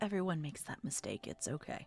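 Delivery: very low quiet bass voice. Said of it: "he's got this very low bass voice".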